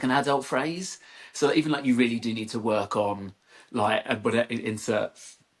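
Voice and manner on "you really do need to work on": normal talking voice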